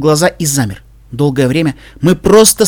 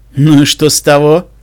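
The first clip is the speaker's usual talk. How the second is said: sneering, caustic and biting, louder and slower; 3 dB louder than usual. Reading a story, the narrator voices a man's retort in an argument, sneering and caustic. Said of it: "язвительно ухмыльнулся он".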